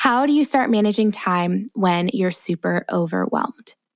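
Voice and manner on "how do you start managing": plain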